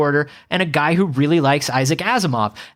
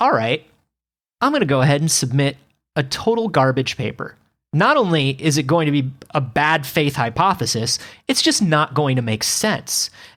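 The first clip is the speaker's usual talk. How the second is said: plain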